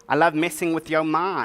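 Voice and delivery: ordinary delivery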